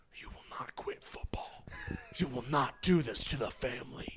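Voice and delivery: breathy cartoon snake voice. Retelling what an older brother said on waking: like a Disney cartoon snake. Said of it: "just like a snake in a Disney cartoon movie".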